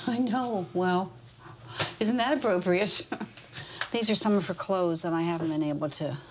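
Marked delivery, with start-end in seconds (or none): 0.1-3.0 said with a little chuckle throughout. Answering another person's remark while going through her clothes, chuckling.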